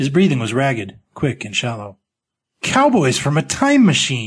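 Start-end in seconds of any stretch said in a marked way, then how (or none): 2.6-4.3 spitting the words out forcefully. A man finally answers the narrator after a pause: spat out. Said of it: "he finally spat out".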